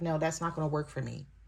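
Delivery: ordinary delivery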